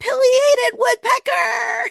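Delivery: very high, shrill, thrilled, excited scream. Recalling a moment in her backyard with her family home, retelling her own scream. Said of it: "I just screamed".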